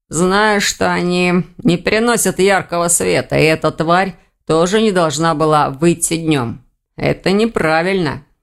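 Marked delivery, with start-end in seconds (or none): none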